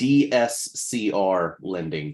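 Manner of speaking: slowed-down pace. Explaining loan types to listeners, repeating a term, said slower. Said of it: "Let me say that slower".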